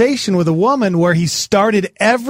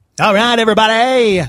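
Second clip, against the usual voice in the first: overly nasal put-on dj voice; 2 semitones higher than usual. Praising a DJ who had a cool voice, the speaker tries it, nasal DJ voice impression. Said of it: "That was too nasally".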